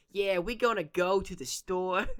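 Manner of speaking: put-on loud, high, strange New York accent, belted. Mocking how the characters talk to each other, in Joey's weird New York accent. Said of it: "he has this like weird New York accent".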